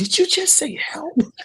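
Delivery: voice shooting all the way up, very high-pitched. Parent retelling hearing the son's first word, voice going all high-pitched. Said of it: "My voice went all high pitched".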